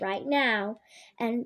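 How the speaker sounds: plain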